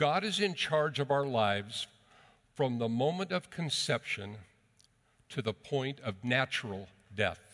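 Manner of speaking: deliberate, measured, slow, very careful, word by word. Telling fellow Christians something you want them to remember, slowly and very carefully. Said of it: "I'm going to say this slowly".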